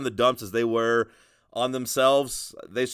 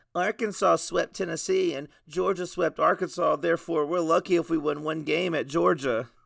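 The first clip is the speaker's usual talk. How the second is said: put-on whiny baby voice; 7 semitones higher than usual. Imitating the other speaker's argument back at him: imitating Seth whining. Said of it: "That was my voice impression of you".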